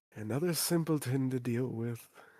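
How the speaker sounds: sighing, muttered under his breath. A game narrator voices a man as the visitors walk away, sighing under his breath. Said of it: "sigh and say under his breath".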